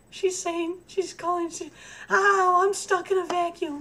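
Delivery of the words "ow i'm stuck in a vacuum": little kitty voice, slower. A pet owner asking for help voices their cat stuck in the vacuum: little kitty voice. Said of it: "I hear her little kitty voice".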